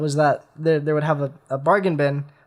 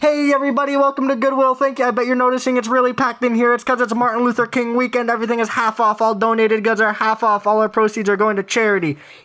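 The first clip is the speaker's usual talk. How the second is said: put-on high, yelled announcer-style voice; 7 semitones higher than usual. Retelling a packed goodwill visit, quoting the loudspeaker announcement: imitating a yelled store announcement. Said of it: "the person was yelling into the speaker".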